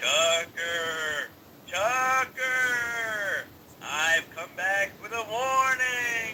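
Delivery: eerie, haunting ghost voice, stretched long. A ghost calls out to tucker to bring a warning, in a ghost voice. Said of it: "Is it really necessary to do the voice?".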